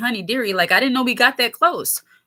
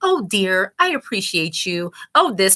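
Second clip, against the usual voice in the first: put-on patronizing, motherly, condescending talk-down tone; 3 semitones lower than usual. Imitating women who try to keep you in your place: condescending tone. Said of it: "in a condescending way".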